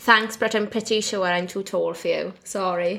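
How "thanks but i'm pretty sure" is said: usual speaking voice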